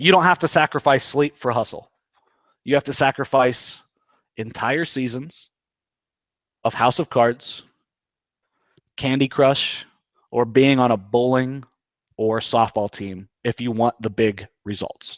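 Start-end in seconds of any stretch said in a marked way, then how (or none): 2.6-15.2 very deliberate, slow, low, word-by-word delivery. Repeating a quote to an audience so they can write it down, slow dictation pace. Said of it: "I'll say it slow so you guys can write it down".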